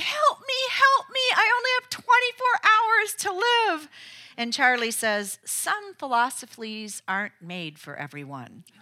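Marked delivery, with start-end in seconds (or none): 0.0-3.9 mock shrill screaming cry, very high. Retelling a story, the speaker acts out Lucy's scream. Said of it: "she screams off into oblivion and yelling".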